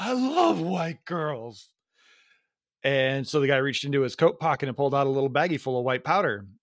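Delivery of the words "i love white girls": put-on, very slow, drunk-sounding talk. Retelling what a very drunk person said at a bar: imitating a drunk person. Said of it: "being very drunk".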